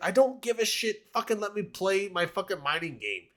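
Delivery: high-pitched, sneering, mocking put-on whine. Imitating players annoyed by interruptions in their game, in a mocking put-on voice. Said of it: "doing the whole voice thing".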